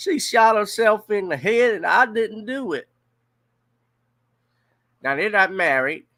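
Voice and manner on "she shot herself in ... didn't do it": high, loud put-on Southern accent. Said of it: "I'm trying to say it in his accent".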